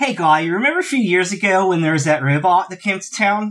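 put-on California valley-girl voice and speech. Acting out what to say to someone, sounding like a valley girl. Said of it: "You sound like a valley girl".

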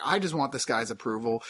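normal talking voice

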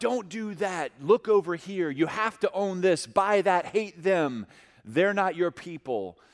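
put-on high yelling voice. Speaker acts out the voice of folly, acting out a voice yelling. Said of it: "the voice that yells out".

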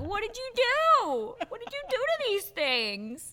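mock disgusted disbelief, very high, wide-swinging pitch.

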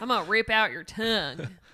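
put-on country accent. Podcast host repeats the previous line, this time in a country accent. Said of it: "I said that real country".

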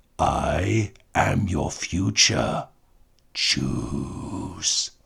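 menacing, frightening, scary villain voice. A performer delivers a character line in a scary voice. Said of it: "Was a scary voice".

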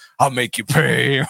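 odd, bitter, vengeful put-on villain voice. Recapping a movie, voicing a bitter character's threat in the Beetlejuice voice. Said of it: "like the Beetlejuice voice".

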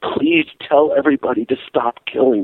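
mock sobbing, tearful. Retelling how a man burst into tears instead of giving his speech, imitating someone sobbing. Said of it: "bursts into tears and starts sobbing".

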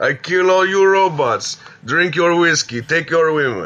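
put-on cheesy Russian accent, high. Imitating a voice heard in Doctor Strange: stereotypical Russian accent. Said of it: "He speaks in that crappy, like, stereotypical Russian accent".

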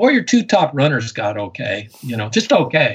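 heavily sarcastic tone, swooping pitch. Talking about a team's two top runners who only got okay, dripping sarcasm. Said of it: "I hope you through the sound waves you get my dripping sarcasm".

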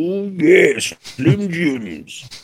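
very high, drawn-out, funny pitchman voice. Imitating the spokesperson from the Slim Jim ads: funny voice. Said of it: "He had a really funny voice".

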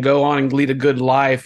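plain

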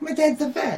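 put-on high little kid voice.

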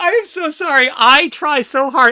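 high, loud, giggly delivery. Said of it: "I get the giggles".

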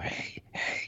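very soft, unvoiced whisper.

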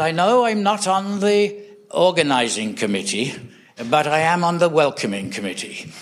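put-on lilting Welsh accent. Quoting a Welsh preacher heard in Adelaide, in his Welsh lilt. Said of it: "in his lovely Welsh lilt".

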